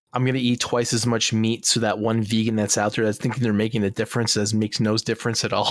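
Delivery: ordinary talk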